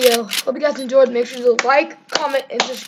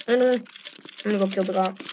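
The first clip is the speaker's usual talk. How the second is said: ordinary delivery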